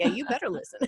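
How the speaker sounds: fake, faux Southern accent. Retelling what is said to the kids when they're in trouble: faux southern accent. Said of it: "my faux Southern accent".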